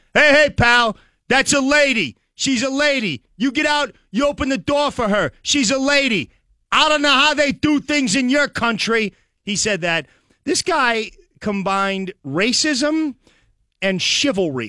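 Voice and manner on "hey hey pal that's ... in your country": put-on yelling, held back, mild hollering. Retelling a stranger yelling at a cab driver: imitating a man yelling. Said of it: "he's just yelling at this cab driver".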